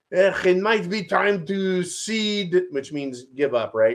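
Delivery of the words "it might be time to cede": put-on heavy German accent, very slow, drawn out. Quoting Kissinger's advice, Kissinger impression with heavy German accent. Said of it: "He had like a heavy German accent".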